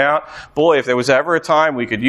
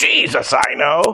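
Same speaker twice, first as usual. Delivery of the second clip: voice of a demon or evil spirit; 3 semitones higher than usual. Speaker reading a bible passage aloud, voicing the spirit: evil spirit voice. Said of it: "There's my evil spirit voice".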